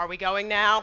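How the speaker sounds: very annoyed, irritated, put-out character voice. Voicing a character asking to leave: annoyed Nell voice. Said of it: "in a very an-, annoyed Nell's voice".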